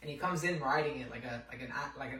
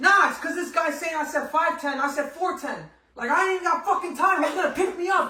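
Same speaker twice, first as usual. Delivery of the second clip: furious rant, very loud, high and shrill; 13 dB louder than usual. Retelling a pissed-off guy yelling on a phone call, imitating angry yelling. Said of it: "He's like yelling in the fucking".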